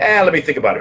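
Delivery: dry, sarcastic, feigned pondering hesitation. Retelling own reply to an offer of a job: retelling a sarcastic reply. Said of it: "I was being, being sarcastic".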